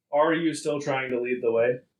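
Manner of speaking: usual speaking voice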